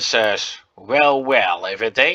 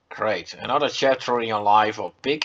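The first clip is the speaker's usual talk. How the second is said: ordinary talk, nothing marked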